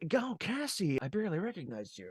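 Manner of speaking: soft, gentle voice oozing charm. Quoting a film character's first line after being unmasked, imitating MODOK's charming voice. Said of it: "Like this charming voice".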